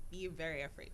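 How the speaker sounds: ordinary delivery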